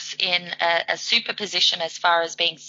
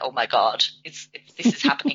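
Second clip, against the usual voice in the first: stunned, swooping disbelief, stumbling over words; 5 semitones lower than usual. Retelling Paul's reaction to a goal: imitating Paul in absolute shock. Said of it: "he was just in this absolute shock".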